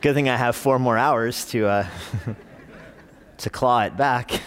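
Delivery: rueful, self-amused chuckle through the words.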